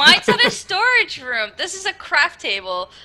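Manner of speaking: shrill, very loud voice. Answering a teasing remark about where the PC is: getting loud. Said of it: "getting a little loud".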